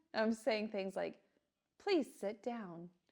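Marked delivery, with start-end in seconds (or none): 1.8-2.8 gentle, calm, soothing flight attendant voice. Showing how recorded classroom memos sound: calm flight attendant voice. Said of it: "a voice that's almost like a flight attendant".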